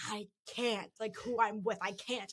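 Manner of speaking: slow, drawn-out, hushed whisper. Retelling refusing to go with him, reenacting it as a retelling of a whisper.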